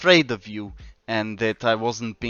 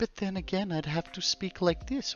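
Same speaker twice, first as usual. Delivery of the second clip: bad, pitched-up fake British accent slipping into American; 9 semitones higher, 9 dB quieter than usual. Asking Katie whether his accent annoys her: bad British accent. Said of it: "when I do a British accent".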